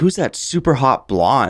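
mimicked loud speaking. Recalling a man they were training, the speaker quotes his remark, retelling a loud remark. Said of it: "he's saying really loudly".

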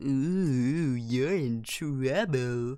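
very slow, silly, taunting schoolgirl voice. Retelling how the girls teased when the dad called the speaker up front, stupid put-on voice. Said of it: "That was a stupid voice".

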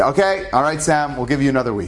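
ordinary talk

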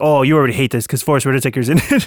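put-on playful teasing tone. Retelling how Danielle made fun of him: imitating Danielle mocking. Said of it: "Danielle made fun of me 'cause she's like".

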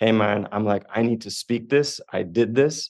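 put-on tearful shaky voice. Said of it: "shaking and uncomfortable and crying".

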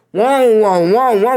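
voice breaking on each whoa, high, exclaiming. Recalling the last episode's title, about John Cena following you, with a voice crack. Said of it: "with that voice crack".

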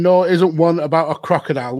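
plain

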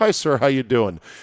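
bright, very cheery, chipper salesperson tone. Retelling how a salesperson at Target greeted them: imitating a cheery salesperson greeting. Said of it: "just very cheerily says".

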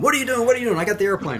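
acted full scream, high-pitched. Recounting a canopy roll during a formation flight, the speaker retells screaming at him. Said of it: "I start screaming at him".

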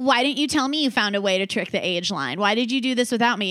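angry voice. Retelling a story, voicing Ron as he confronts Harry: mock-bitter, angry Ron. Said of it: "Ron's like all like bitter and angry".

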